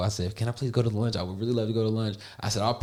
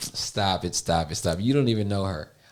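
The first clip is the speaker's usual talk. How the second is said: mock talking while laughing through the words; 2 semitones lower than usual. Retelling someone's reaction to a joke: imitating someone laughing while talking. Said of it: "Zaretha just started laughing, like".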